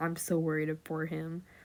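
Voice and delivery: ordinary talk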